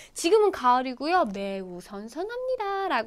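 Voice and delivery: ordinary talk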